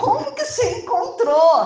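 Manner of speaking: high, loud, amazed, astonished laughing voice.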